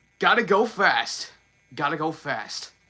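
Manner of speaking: loud, drawn-out, slow cartoon hedgehog voice. Asked to say the catchphrase, the speaker obliges in Sonic voice. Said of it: "Say gotta go fast in Sonic voice".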